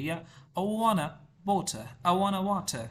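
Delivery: American-accented English. Explaining accent differences, the speaker demonstrates an american english accent. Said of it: "अमेरिकन ने इतना करिए".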